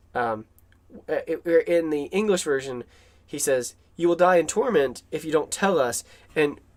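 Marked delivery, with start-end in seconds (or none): none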